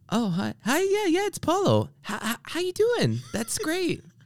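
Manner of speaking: very high, swooping, sing-song chatty voice. Imitating a friend speaking on a Zoom call: imitating Paulo. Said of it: "I was trying to imitate my friend doing it".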